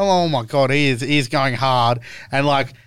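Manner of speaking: usual speaking voice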